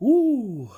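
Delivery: very high, very loud voice, mid-yawn. Greeting good people and apologizing for repeated yawning: yawning. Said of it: "I keep yawning".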